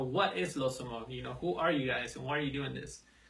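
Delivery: ordinary delivery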